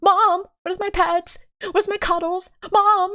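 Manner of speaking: very high, needy, whiny cat voice. Streamer tells Twitch chat what the cat Leo says, doing Leo the cat's voice. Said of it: "that's how I headcanon Leo's voice".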